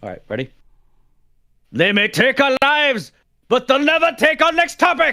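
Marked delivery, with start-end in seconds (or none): 1.7-5.1 terrible put-on Scottish accent, very high and slow. Showing off a favorite accent on the spot, put-on scottish accent. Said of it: "my favorite uh, Scottish accent".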